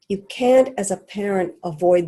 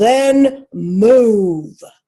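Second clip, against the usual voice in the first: booming loud voice, "move" drawn out; 3 semitones higher, 8 dB louder than usual. Retelling how his father answered him down the stairs, retold booming reply. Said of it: "He boomed down the stairs at me and said".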